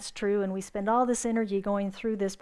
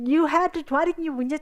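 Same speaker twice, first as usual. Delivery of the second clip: put-on furious scream, higher and louder; 5 semitones higher, 4 dB louder than usual. Telling a story, the speaker acts out a man screaming at the boater: retelling a furious scream. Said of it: "he's screaming at the guy in the boat".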